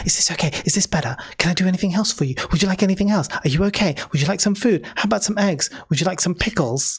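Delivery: voice dropped to a hushed stage whisper. Retelling what a man said after lowering his voice, half-whispering. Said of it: "lowers his voice to whisper".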